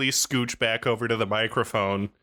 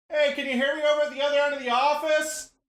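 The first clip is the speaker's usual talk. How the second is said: very high, far-off, pretend distant yell. Joking that the speaker is across the office: pretend yelling from far away. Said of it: "I'm yelling to you from the other end".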